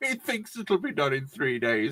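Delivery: giggling and laughing all the way through. Quoting a meme caption about the three-day beer, laughing while talking. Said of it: "I'm laughing at this point".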